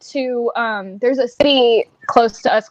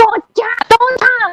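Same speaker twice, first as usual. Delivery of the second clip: put-on piercing, shrill, very high scream; 11 semitones higher, 3 dB louder than usual. Retelling how she warned people off the pool, imitating her screaming. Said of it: "So she".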